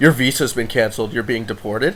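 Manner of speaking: plain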